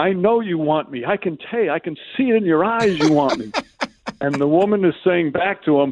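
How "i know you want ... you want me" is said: acted, teasing, tongue-in-cheek playful yell. Retelling a man's yelling match with a woman from the station; retelling a playful yell. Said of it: "he's yelling at her".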